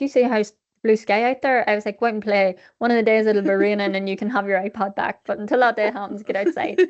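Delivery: ordinary talk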